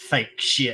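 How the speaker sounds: muttered under the breath. Retelling a remark made walking past a table: imitating a mutter under breath. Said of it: "kinda under his breath goes".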